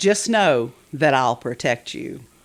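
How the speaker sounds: put-on flowery knightly speech. Retelling what Sir Robert promised at the event: imitating Sir Robert. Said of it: "And that's how he spoke".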